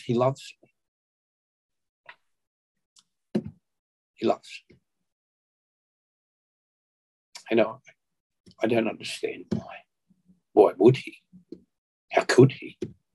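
put-on sobbing, each line broken by sobs. Recalling a moment when he could barely speak, re-enacting sobbing speech. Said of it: "I was just sobbing still".

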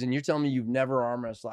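ordinary talk

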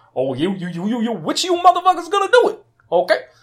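very high, very loud, swooping outburst. Retelling a movie scene where the villain taunts the group: Chiwetel Ejiofor impression. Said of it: "Good impression".

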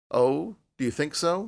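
indifferent, uninterested tone. Narrating, a man answers a woman's remark about a kitten, indifferently. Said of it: "he asked indifferently".

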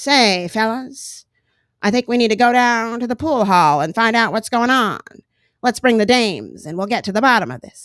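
put-on old-fashioned, vintage-style old-timey radio voice. Acting out a character rallying the fellas to investigate, old-timey voice. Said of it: "they would always have that kind of old-timey voice".

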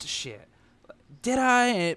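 high, swooping, caught-off-guard surprise, voice jumping up. Retelling a film scene, voicing Dennis Hopper's line genuinely caught off guard. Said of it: "But he's not doing it like sarcastically".

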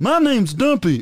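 very high character voice pushed way up. Doing a requested voice of someone called Dumpy: Dumpy voice. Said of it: "Do Dumpy".

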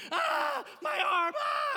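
drawn-out, very high, very loud scream of pain. Recalling being hit by a pitch at Little League, reenacting screaming in pain. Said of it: "I'm just screaming".

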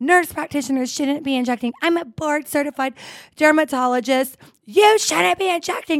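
mock drunken, high-pitched, screaming rant. Recounting how a woman confronted the speaker, retelling someone screaming. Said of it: "And she's screaming at me".

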